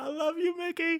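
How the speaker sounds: put-on very high, loud, drawn-out little-girl shriek. Reenacting a fan screaming at a match: imitating screaming like a little girl. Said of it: "screaming like a little girl and screaming how much he loves Mickie".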